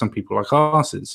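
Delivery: ordinary delivery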